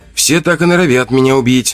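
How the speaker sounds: wry, smirking tone. The narrator answers someone who has just threatened to kill him: with a smirk. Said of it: "усмехнулся я".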